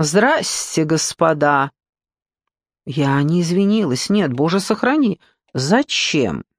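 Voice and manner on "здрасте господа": mock-haughty, put-on arrogant voice. Retelling arriving late to rehearsal and greeting the accompanists; retelling a haughty voice. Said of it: "надменным таким голосом говорю".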